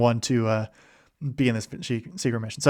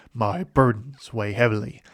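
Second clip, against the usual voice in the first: put-on dramatic game-character voice; 2 semitones lower, 5 dB quieter than usual. Describing a sad StarCraft two moment, quoting the character's voice line: dramatic Zeratul impression. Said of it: "in his very dramatic voice lines".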